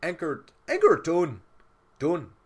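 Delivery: very high, very loud, bad Canadian accent. Voicing a guy who grabs a bird and anchors it: bad canadian accent. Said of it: "trying to do the whole fucking Canadian thing".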